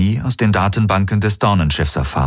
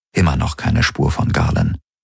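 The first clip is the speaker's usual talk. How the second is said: ordinary delivery, nothing marked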